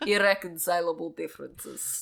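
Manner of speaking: Croatian-accented speech. Trying out a Slavic caricature on a phrase, in a Croatian accent. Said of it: "So try doing it in a Croatian accent".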